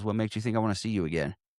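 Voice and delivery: put-on deadpan, straight-faced, level delivery. Retelling a scene where a man on a date answers a therapist: retelling a deadpan line. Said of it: "he just deadpan, straight face goes".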